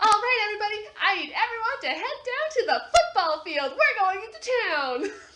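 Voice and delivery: very high, very loud shout over a loudspeaker. [name] addresses everyone over the loudspeaker; [name] yelling over loudspeaker. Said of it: "I'm sorry for yelling".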